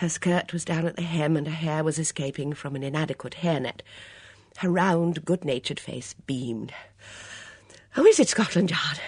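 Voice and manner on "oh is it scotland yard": breathless, winded, out of breath. Having arrived at a brisk trot, a woman asks her question breathlessly. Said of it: "she asked breathlessly".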